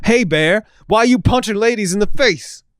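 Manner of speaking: yelling, high-pitched.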